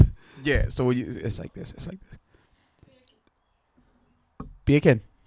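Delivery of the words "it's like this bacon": attempted English accent. Speaker demonstrating a word for others, put-on English accent. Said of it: "I'm doing my best to say it in English accent".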